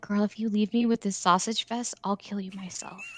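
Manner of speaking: barely audible, very quiet whisper. Whispering to a revived party member in character: whispering in character. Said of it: "I'm gonna whisper to her".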